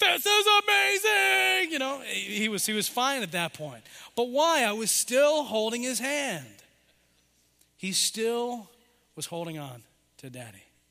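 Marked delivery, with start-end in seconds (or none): 0.0-1.7 excited, thrilled scream, very high and rough. A dad retelling his child screaming among big crashing waves, acting out an excited scream. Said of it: "He's screaming, going".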